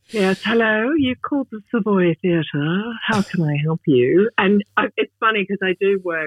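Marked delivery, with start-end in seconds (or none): 0.1-4.3 put-on, clear British accent in a phone voice. An australian in the uk shows answering the savoy theatre phone, voice changed for brits. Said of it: "change my voice so I can be heard and understood by the Brits".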